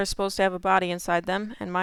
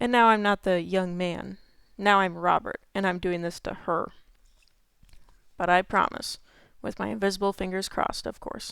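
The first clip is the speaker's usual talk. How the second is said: usual speaking voice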